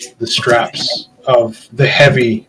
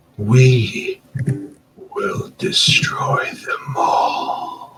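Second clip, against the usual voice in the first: very slow, craving, hungry whisper; 5 dB quieter than usual. Voicing a weapon answering its new wielder: hungry-sounding voice. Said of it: "there's almost, like, a hunger in his voice".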